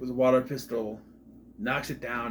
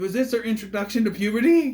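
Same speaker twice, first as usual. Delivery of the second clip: voice breaking into a high squeak; 7 semitones higher, 6 dB louder than usual. Discussing an actress's role in a movie, the speaker's voice goes squeaky and cracks. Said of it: "I sound like I'm going with puberty with my squeaky".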